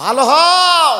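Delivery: high, slow, loud booming repeated shout. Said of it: "preacher repeats his call".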